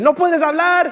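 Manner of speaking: loud, drawn-out, high shout.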